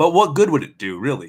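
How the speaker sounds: plain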